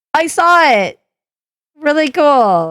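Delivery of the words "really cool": dripping with sarcasm. Listing witnesses during a stressful situation, then commenting: sarcastic. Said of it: "I'm being sarcastic".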